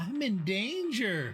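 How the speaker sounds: put-on teeny, high, squeaky little voice. Retelling to listeners what Ava said, imitating Ava's tiny voice. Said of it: "Ava doing a tiny voice going".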